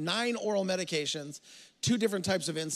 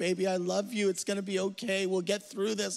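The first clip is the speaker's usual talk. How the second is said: mock-tearful, put-on crying voice with comforting tone. Retelling a phone call where mom comforted the speaker, imitating mom crying. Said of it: "She crying on the phone".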